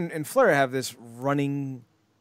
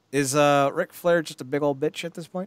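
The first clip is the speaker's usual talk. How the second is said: ordinary talk, nothing marked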